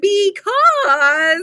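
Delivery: "because" leaned on, each syllable weighted. Retelling how her daughter copies her: imitating daughter mimicking her because. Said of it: "she just mimics me".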